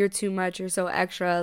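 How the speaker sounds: plain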